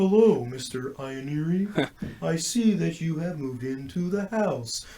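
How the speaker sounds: eerie, unsettling voice. Describing how the letters were read in a Netflix show, doing The Watcher letter voice. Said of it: "you're scaring me. Don't do that".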